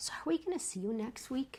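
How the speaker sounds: hushed, soft half-whisper, voice barely there. Retelling what the studio owner asked after salsa class: imitating Amanda half-whispering. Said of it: "leans over and whispers".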